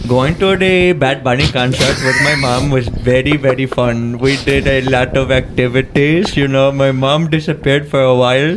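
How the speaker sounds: speaking with Indian accent. A guest, asked by the hosts to answer in an accent, uses an Indian accent. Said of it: "In Indian accent?".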